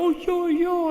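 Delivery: very high, loud excited shout.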